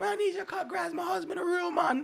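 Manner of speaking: put-on Jamaican accent. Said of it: "your accent's not that bad".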